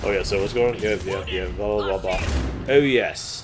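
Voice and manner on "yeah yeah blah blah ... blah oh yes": ordinary talk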